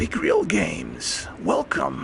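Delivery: deep, very low serpent voice. Starting a stream and welcoming a viewer, in a snake voice. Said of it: "I'm just going to use my snake voice".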